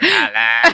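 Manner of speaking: very high, eerie, ghostly calling voice. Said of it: "And you're like".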